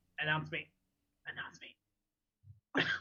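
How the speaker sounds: hushed, slow, urgent, pressing whisper. Walking in and speaking aside to Yanran, in a whisper. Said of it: "I'm gonna whisper to Yanran".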